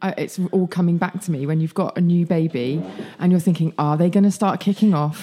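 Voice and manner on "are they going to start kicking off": ordinary talk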